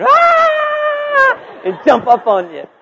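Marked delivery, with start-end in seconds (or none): 0.0-1.6 put-on high, loud child scream.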